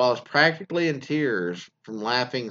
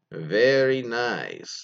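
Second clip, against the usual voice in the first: trilled r in "very", stretched "nice". Reading a submission where a boyfriend says it like Borat: Borat voice. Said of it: "in his best Borat impression".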